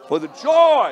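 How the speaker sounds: loud, very high call-and-response shout. Leading the congregation in a phrase it was asked to raise: saying it loudly. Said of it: "Say it loudly".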